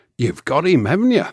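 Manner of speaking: put-on English accent. Retelling a man's remark in a story, in his very English accent. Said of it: "in his very English voice".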